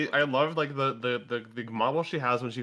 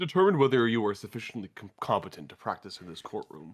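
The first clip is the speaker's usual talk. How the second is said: put-on voice pushed as low as it goes; 3 semitones lower than usual. Voicing a huge character in the courtroom: deepest voice possible. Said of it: "the deepest voice I can muster".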